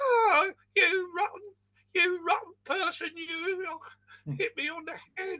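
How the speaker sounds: very high, small, squeaky voice. Retelling throwing something into a packing case and the reply from inside: small little voice. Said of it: "this little voice went".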